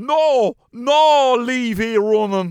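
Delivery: put-on Donegal-accented speech. Retelling how she told you and the lads off, in a big Donegal accent. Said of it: "gave us in a big Donegal".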